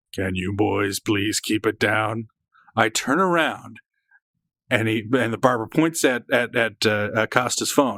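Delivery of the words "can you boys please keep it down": put-on deep voice, low, lower, slower. Retelling a man behind him at a diner speaking to the kids: deep voice of a stranger. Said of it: "heard a deep voice say".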